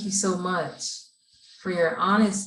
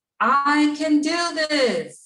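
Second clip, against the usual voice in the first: said through a smile, very slow, pitched up; 8 semitones higher, 5 dB louder than usual. Leading a group affirmation, asking them to smile: smiling while speaking. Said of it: "You're gonna smile when you say".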